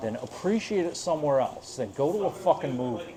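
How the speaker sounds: plain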